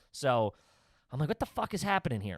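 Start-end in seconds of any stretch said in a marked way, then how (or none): 1.3-2.4 put-on fast, furious outburst of disbelief. Retelling a scene in a restaurant, the speaker acts out being furious. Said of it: "And now I'm just like furious".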